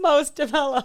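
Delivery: sarcastic scare-quote delivery. Podcast host repeating a phrase with air quotes: sarcastic air-quote tone. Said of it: "Could you not tell in my voice?".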